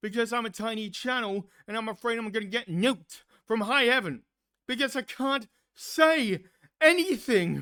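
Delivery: loud, upset, worked-up emotional outburst. Venting about being called names online, getting emotional. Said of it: "I'm sorry if I'm getting emotional".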